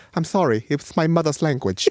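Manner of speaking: put-on Jamaican patois accent. Retell what he suddenly came out with in an interview, in Chris Eubank Senior's patois accent. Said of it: "started bringing this random patois accent out".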